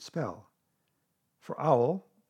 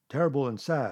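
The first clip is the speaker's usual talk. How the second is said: ordinary delivery, nothing marked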